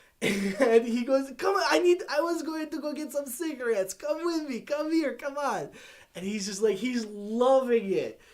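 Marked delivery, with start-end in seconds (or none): 1.4-5.7 heavy, thick put-on Italian accent, pitched up. Retelling what an italian man said when he saw him, fresh-off-the-boat italian accent. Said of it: "he's straight off the boat Italian".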